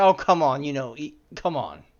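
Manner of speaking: lively, animated put-on voice swooping up and down. Retelling a joke from a TV episode: imitating John Oliver. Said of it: "and he's like".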